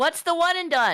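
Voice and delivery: very high, loud yell. A player calls out a question during the game, yelling into the microphone. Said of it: "was that too loud?".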